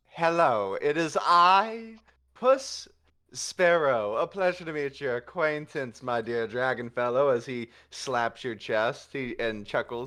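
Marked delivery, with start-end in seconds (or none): 0.2-7.3 flamboyant, showy swashbuckler voice with drawn-out "I". Voicing a self-described rogue and swashbuckler greeting a dragon: flamboyant swashbuckler voice. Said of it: "aren't you flamboyant, good sir?".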